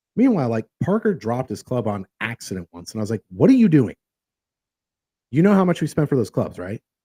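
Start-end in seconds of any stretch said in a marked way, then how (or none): 3.3-6.7 fatherly dad voice with a scolding tone. Retelling reacting when someone dropped a golf club: dad voice. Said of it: "dad voice".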